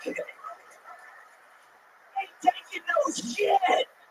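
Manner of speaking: whispered, straining, breathy man's voice. Doing a comedy bit: impression of a constipated man. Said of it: "my impression of a constipated man".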